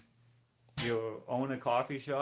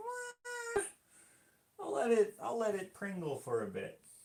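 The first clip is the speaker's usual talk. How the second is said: much higher, whiny mock voice. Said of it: "Whereas before I was like".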